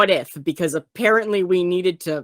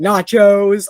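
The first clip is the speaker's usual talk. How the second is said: screaming, louder; 6 dB louder than usual. Retelling a scene from a film: imitating Adam Driver screaming.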